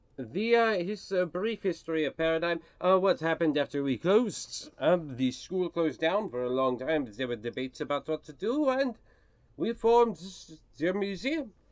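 put-on mixed French, Russian and German foreign accent. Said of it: "Whoa, where did Cassius Dupree come from?".

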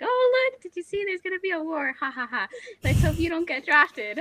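put-on high, loud, gleeful, gloating, laughing teasing tone. Retelling a ten-year-old girl telling him about a war, imitating her laughing tease. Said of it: "she's like".

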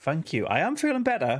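upbeat, chipper and perky voice. Welcoming listeners back after being ill, in a perky voice. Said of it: "by my my perkiness in my voice".

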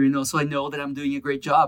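ordinary talk

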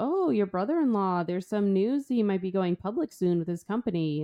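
put-on creepy man voice with fake smile. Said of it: "puts that fake smile on".

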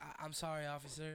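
put-on near-tearful voice. Retelling apologizing to an officer after a traffic stop: retelling almost crying. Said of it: "And I'm almost crying".

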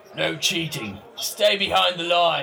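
growling voice. Narrating a scene, the speaker voices a worker at a darts game, growling voice. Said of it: "a familiar voice growls out".

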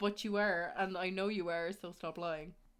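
ordinary talk, nothing marked

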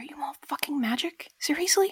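soft whisper under the breath. Leaning in and asking the others if they're magic: whisper. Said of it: "lean in and whisper".

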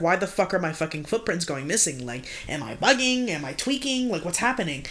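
usual speaking voice

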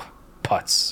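imitated under-the-breath mutter. Retelling a public defender shaking his head in court: imitating a mutter under the breath. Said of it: "under his breath".

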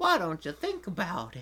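creepy, pervy-sounding voice. Voicing Agumon answering Ty, make him sound like the pervert guy from Family Guy. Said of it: "made him sound like the freaking pervert guy".

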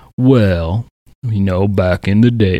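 put-on slow, unhurried old down-home Southern drawl. Describing a farmer on a news show, imitating a slow old southern guy. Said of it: "he's an old Southern guy, so he doesn't talk fast".

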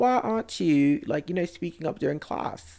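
put-on posh British accent. Retelling what he said to the class, in a put-on posh british accent. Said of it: "he said it with a little beans and toast, Cheerio, pip pip accent".

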